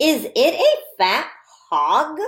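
read-aloud tone, pitch rising on hog. Reading a practice sentence aloud together with listeners, with rising question intonation. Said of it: "I'm going to read this sentence with a question voice".

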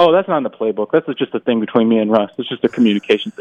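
dead serious, matter-of-fact, acted, rattled off. Retelling his answer to a playful question, retelling a deadpan reply. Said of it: "deadpan as he could be".

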